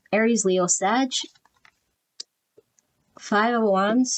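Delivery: talking through a yawn. Reading out tarot cards before going to bed, yawning. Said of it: "Now I'm yawning".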